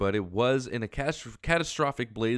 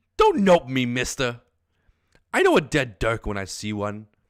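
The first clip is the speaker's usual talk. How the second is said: put-on very loud, animated, swooping English accent; 8 dB louder than usual. Jake answering Dirk's nope: English accent. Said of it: "Jake, I know has has to have an English accent".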